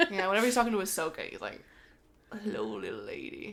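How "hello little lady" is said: soft, deep, hushed villain voice. Retelling how Cad Bane greets Ahsoka, doing a Cad Bane impression. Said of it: "He has like the vibrating deep voice".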